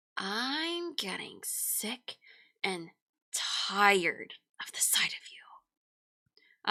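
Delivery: deliberate, unhurried, very slow, drawn out. Directing a fellow performer how to read a line, slow drawn-out delivery. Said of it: "I want you to slow down".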